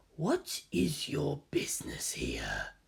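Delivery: faint, very soft, hushed, tonal echoing voice. Narrator voicing a slab that addresses Nagisa, in a tonal, faintly echoing voice. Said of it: "in a tonal, faintly echoing voice".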